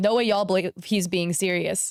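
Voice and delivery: ordinary delivery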